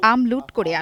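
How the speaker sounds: ordinary delivery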